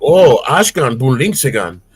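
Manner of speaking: put-on German accent. Showing the cartoon reference they say to people, fake German accent. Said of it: "followed by a fake German accent".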